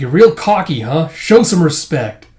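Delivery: put-on, loud, superior, condescending tone. Reading out a comic character who looks down on another: imitating condescending tone. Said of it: "looking down at him condescendingly".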